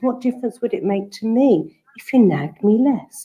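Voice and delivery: even, calm, counsellor-like therapeutic tone, acted. Retelling a child's reply to a parent's nagging: imitating a therapeutic tone. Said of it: "she said it in this therapeutic tone".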